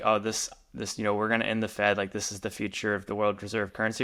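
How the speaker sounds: ordinary talk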